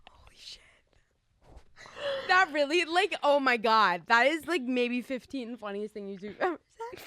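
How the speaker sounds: crying with laughter. Reacting to a joke from the other speaker: crying with laughter. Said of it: "you're literally crying".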